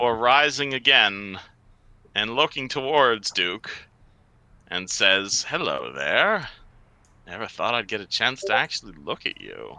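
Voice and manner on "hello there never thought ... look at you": put-on soft, sing-song, very sweet old lady voice. Voicing a dwarven woman who greets Duke, in a very nice old woman voice. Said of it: "definitely still sounds like a very nice old woman".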